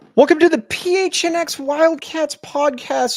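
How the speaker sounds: very high, drawn-out voice. Welcoming listeners to the podcast, for the great Saul Bookman, voice a little bit higher. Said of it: "Notice my voice getting a little bit higher".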